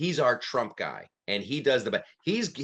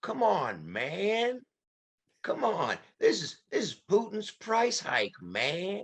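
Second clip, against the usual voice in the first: slow, drawn-out, pitched-up, confused and befuddled tone; 8 semitones higher than usual. Showing the Biden impression, mixing Jimmy Stewart and Walter Brennan: Joe Biden impression. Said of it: "that's my Joe Biden".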